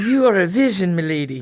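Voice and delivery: sexy, exaggerated, mock Irish brogue. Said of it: "said with a sexy Irish brogue".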